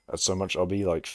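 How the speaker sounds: ordinary delivery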